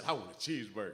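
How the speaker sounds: mock, bursting with enthusiastic child excitement. Retelling how the granddaughter asked for a cheeseburger: imitating enthusiastic child. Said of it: "With such enthusiasm".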